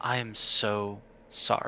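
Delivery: very slow, breathy whisper. Whispering in character to a fellow cook while walking by: whispering an apology. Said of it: "lean in and whisper".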